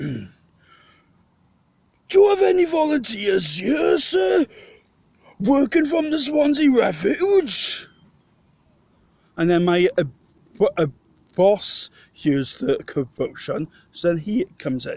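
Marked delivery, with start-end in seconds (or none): 0.0-7.9 very high, grand, stagey, theatrical stage delivery. Retelling a man asking about volunteers, in a Shakespeare voice. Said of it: "in a Shakespeare voice".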